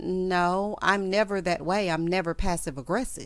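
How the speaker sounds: ordinary delivery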